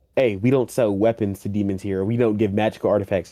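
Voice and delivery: ordinary talk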